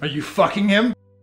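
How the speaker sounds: put-on drunk, very loud and high-pitched. Blanca confronts the person who was just brought home, drunk. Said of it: "You're drunk".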